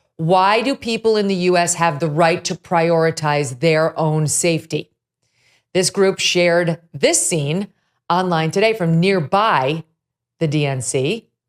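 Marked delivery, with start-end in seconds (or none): none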